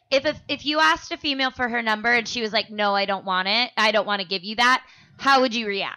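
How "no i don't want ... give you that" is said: ordinary delivery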